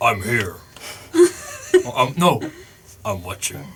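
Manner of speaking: disembodied phantom voice with swooping pitch. Player casts an illusion voice right behind another character, very deep voice. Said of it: "make a very deep uh, sounding voice".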